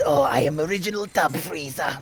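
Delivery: high-pitched villain voice with a smoker's sound. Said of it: "Like this".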